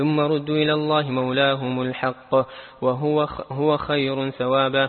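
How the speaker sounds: ordinary delivery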